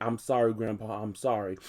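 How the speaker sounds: normal talking voice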